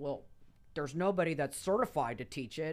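put-on, affronted, indignant objection. Retelling their reaction to hearing someone taught Bikram yoga nearby; mock-indignant retelling. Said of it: "I got all indignant".

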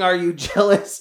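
acted-out, held-back, mild screamed jeer. Speaker, stuck at the steering wheel, retells what a woman screamed, imitating her screaming. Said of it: "And she's screaming".

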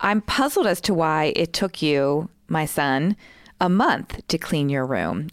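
ordinary talk

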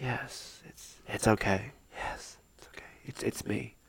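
soft, unvoiced, tearful whisper. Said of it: "he's, like, crying".

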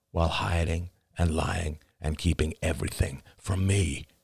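plain

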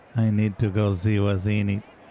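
stiff, flat, weirdly mechanical robotic monotone. Asked by a companion if they're okay, talking like a robot. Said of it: "you're weirdly talking like a robot".

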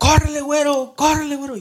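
very high, loud, urgent yelling. Recounting the man who took them across shouting at them to run, retelling a shout. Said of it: "me gritaba".

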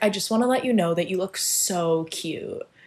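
mock, patronising, talking-down condescending tone. Retelling what a woman at school said about an outfit: imitating a very condescending tone. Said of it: "in, like, a very condescending way".

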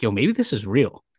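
ordinary delivery

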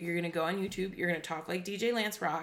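ordinary talk

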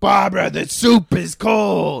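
poor high, raspy celebrity voice, cold stretched. Doing everyday scenes as a shitty Al Pacino impression. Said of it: "just shitty Al Pacino".

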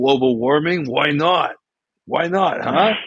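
put-on high old geezer voice. Speaker riffs in a joking bit, doing an old man voice. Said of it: "that's a great old man joke".

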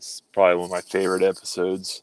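dry, tongue-in-cheek sarcasm. Agreeing to move on to the next chapter, in a sarcastic tone. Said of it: "Are you being sarcastic?".

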